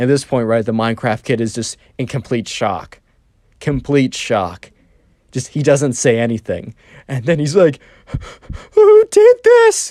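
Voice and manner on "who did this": mock, very high, loud whimpering sob. Retelling the Minecraft kid's reaction after the blast, imitating a crying, whimpery voice. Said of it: "a crying, whimpery voice of like".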